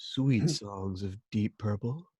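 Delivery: put-on low, congested head-cold voice. A podcast co-host tries the voice his co-host just called for: low head-cold voice. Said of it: "Low, head cold voice now".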